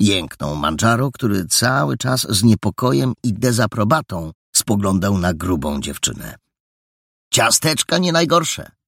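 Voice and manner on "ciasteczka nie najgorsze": playfully teasing, higher pitch. A male character answers a girl about the cookies, teasing. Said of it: "droczył się Paragon".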